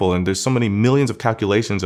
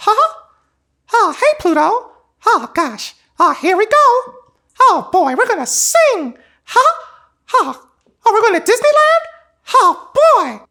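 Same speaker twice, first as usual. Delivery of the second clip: high and loud, with swinging pitch; 5 dB louder than usual. A self-described Disney kid shows off a childhood impression: Mickey Mouse voice. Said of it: "like I did Mickey all the time".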